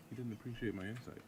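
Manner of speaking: dry, flat, expressionless deadpan understatement. Telling of being bullied at school by a poor bully: deadpan delivery. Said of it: "The deadpan delivery of he didn't".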